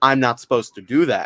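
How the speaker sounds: heavy mockery, muttered low. Describing a woman who keeps touching the speaker, imitating her mocking tone. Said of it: "in a very mocking tone".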